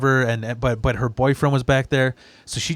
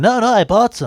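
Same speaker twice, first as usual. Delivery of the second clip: nasally, much higher, slower; 9 semitones higher, 5 dB louder than usual. Retelling what a man who came by replied, nasally voice. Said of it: "He had this like nasally voice".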